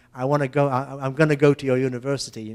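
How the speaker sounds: ordinary talk, nothing marked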